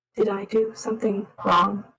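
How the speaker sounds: very hushed, close-up, worried voice. A character leans very close to another and asks, in a very hushed voice. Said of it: "in a very hushed voice".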